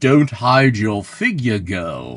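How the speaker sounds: low, sepulchral, tomb-like ghost voice. Retelling a film scene where the ghost speaks: imitating a sepulchral ghost voice. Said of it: "this sepulchral voice comes out".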